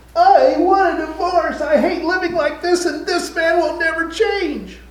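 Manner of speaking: mock, very high-pitched screech through sobs. Retelling what a man's wife said into the phone, imitating a sobbing screech. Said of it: "she is sobbing. And into the phone, she screeches".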